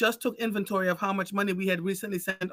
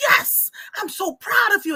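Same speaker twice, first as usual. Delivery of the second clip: mock very high, loud, drawn-out ecstatic screaming; 13 semitones higher, 5 dB louder than usual. Speaker retells what their older son told his brother at a birthday party, imitating screaming. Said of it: "he's like screaming and hugging his brother".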